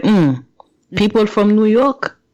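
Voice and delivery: put-on accent from Haiti. Retelling their mother's reply when mocked and talked back to: mocking mom's Haitian accent. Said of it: "Like when I mock her".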